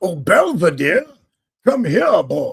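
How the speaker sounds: loud, swooping, terrible cartoon Southern colonel accent. Describing a terrible accent, the speaker shows it off: Looney Tunes Southern colonel accent. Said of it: "the old Southern Plantation Colonel and the old Looney Tunes cartoons".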